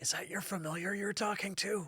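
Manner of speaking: high, hushed half-whisper from off to the side. Narrating to the players, voice an unseen figure speaking from the side, half-whispering. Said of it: "You hear a whisper coming from the side".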